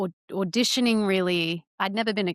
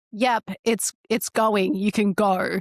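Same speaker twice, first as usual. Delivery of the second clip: put-on annoyed tone, slower; 4 dB louder than usual. Speaker retelling her sister filming her video; imitating sister's annoyed voice. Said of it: "Just the annoyance in her voice".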